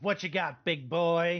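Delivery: slow, drawled goat-creature voice. Voicing a goatling taunting a player's character: goatling voice. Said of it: "the goatling looks at him and says".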